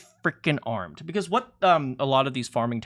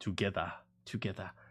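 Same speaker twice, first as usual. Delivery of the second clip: put-on very low, quiet, hushed, almost-Jamaican trailer accent; 7 semitones lower, 13 dB quieter than usual. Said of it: "What is that accent?".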